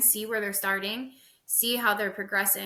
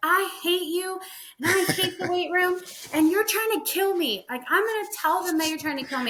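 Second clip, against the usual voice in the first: mock, high-pitched yell; 9 semitones higher than usual. Retelling a lifter yelling at you mid-bench press, imitating someone yelling. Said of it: "she starts yelling at me".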